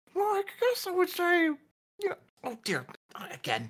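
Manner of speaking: very high-pitched, spoken through a chewing mouthful. Voicing a halfling baker who chews a pastry while thinking: acting a baker chewing while talking. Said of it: "starts chewing on it".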